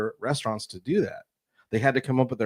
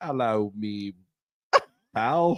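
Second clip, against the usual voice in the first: bad, fake, failed Australian accent. Greeting someone in australia, in a failed australian accent. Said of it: "What accent was that?".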